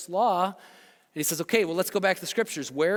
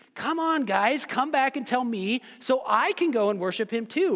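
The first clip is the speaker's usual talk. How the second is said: dripping sarcasm, fake eagerness, pitched up; 5 semitones higher than usual. Retelling a ruler's request to the wise men: sarcastic Herod imitation. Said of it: "Hashtag sarcasm".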